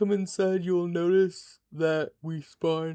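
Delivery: speaking through a yawn. Showing viewers around their house, the speaker talks while yawning. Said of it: "I'm yawning".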